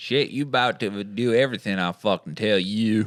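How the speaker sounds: mock, put-on Southern hypnotist accent. Picturing a hypnotist talking to his subjects, in a put-on southern hypnotist voice. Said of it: "do we just unlock a new character".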